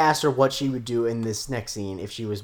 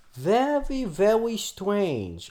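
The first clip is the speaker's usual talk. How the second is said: very high cartoon voice, swooping pitch; 10 semitones higher than usual. Commenting on an episode scene, slipping into an Elmer Fudd voice. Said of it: "I don't know what voice I was doing there".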